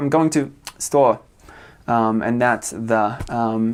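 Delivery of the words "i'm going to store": put-on far northern English accent, "the" swallowed whole. Showing how people far north in england talk: imitating a far northern english accent. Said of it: "They're just like".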